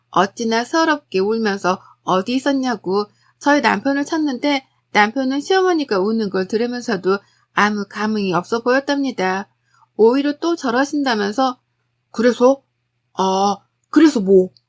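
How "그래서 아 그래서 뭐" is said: loud, slow, blunt, curt tone. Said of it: "퉁명스레 대답만 했고".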